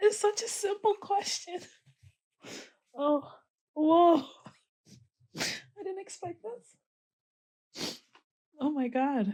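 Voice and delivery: high, shrill, loud words through tears. On camera, caught off guard by a simple question, crying while talking. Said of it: "Why am I crying?".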